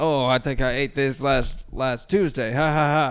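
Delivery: mock awkward, forced tone. Retelling a worker trying to joke around: imitating someone forcing a joke. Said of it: "trying to joke him around with me".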